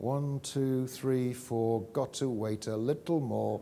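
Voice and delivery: quiet under-breath muttering. Speaker quotes her counting to herself before calling on students, muttered under her breath. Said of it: "she says under her breath".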